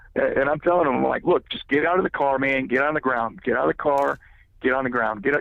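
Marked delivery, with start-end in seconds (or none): 1.3-5.5 put-on barking, shouted tone. Retelling ordering a man out of his car; retelling barking orders. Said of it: "I'm barking orders at him".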